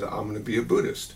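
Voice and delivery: ordinary talk, nothing marked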